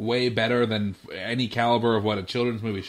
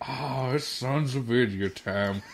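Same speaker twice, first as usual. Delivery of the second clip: put-on old man voice; 4 dB quieter than usual. Imagining an old Tuskegee Airman who listens every Tuesday, old man voice.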